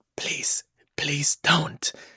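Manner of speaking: soft, whispered, begging. Retelling how a generated voice said a line: imitating a whisper. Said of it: "he's whispering".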